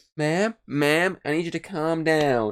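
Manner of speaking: high, slow, drawn-out feminine voice. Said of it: "very blatantly a woman's voice going".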